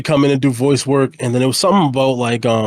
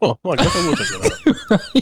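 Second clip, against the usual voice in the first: high, laughing mock voice. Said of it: "Bobby's like".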